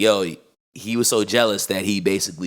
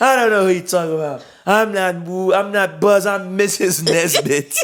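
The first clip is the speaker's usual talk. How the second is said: high, drunken slur, words running together, acted out; 11 semitones higher, 5 dB louder than usual. Retelling a scene, the speaker voices a character, imitating drunk slurring. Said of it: "he's like slurring his words".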